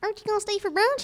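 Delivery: very high animated cartoon character voice. A voice actress introduces her role, then gives a sample line: Apple Bloom voice. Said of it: "and I voice Apple Bloom".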